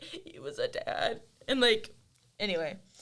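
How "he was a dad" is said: very slow, very drawn-out play-acted tearful sobbing. Retelling own reaction to a sad movie scene: imitating own sobbing. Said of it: "I'm just sobbing and I'm like".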